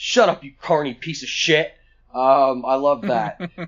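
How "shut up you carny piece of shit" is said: mock venomous malice behind every word. Retelling a wrestler's line cutting off an announcer: imitating a malicious insult. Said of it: "says it with, like, real malice in his voice".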